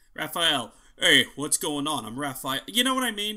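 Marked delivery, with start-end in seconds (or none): 1.0-2.6 same well-known leading-man voice, cocky hero swagger. Showing that a voice actor uses the same voice for every role: Nolan North impression. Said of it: "he's most well known for the same voice".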